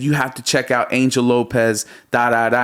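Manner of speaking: ordinary delivery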